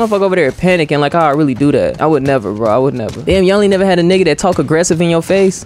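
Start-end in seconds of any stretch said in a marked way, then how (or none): none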